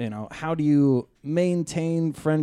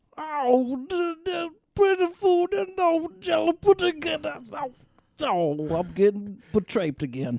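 very high put-on voice with swinging, swooping pitch. Joking about impressions in prison: Bill Cosby impression. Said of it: "do his impressions of him".

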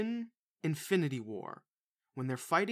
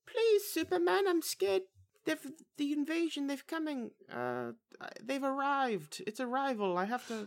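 put-on scared movie-star voice, much higher; 12 semitones higher than usual. Imitating Amy Adams in a movie role, in a mock-feeble scared Amy Adams voice. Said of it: "but she's feeble".

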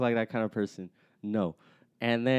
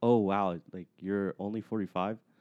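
mock deadpan, flat, level monotone delivery; 3 semitones lower, 3 dB quieter than usual. Retelling how a young woman answered an older lady's age; imitating a monotone voice. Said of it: "like monotone voice".

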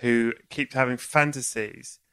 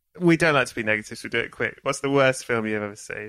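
plain

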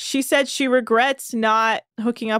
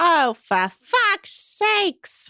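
drawn out, pitch swinging up and down; 7 semitones higher than usual. Retelling a scene where Aisha swears: terrible Aisha impression. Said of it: "That's a terrible impression of Aisha".

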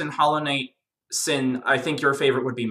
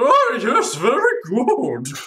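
high, slow drawl like royalty; 9 semitones higher, 4 dB louder than usual. Imagining how the king might sound: Pale King voice. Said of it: "imagining the Pale King sounding something like".

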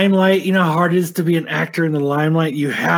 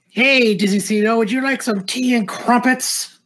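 put-on drunk British accent, higher pitched; 6 semitones higher than usual. Mocking a drunk actor: drunk Brit Tom Holland impression. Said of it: "He's a drunk Brit".

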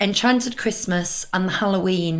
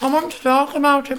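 pitched-up talking, words mashed around a mouthful; 6 semitones higher, 3 dB louder than usual. A co-host wants to discuss the annual pass party, talking with mouth full. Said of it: "but my mouth full of Oreo".

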